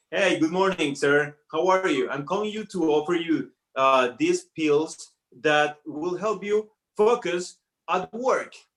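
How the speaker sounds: scripted telemarketer sales-pitch delivery. Retelling working in a call center: imitating own past call-center pitch. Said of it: "It was like".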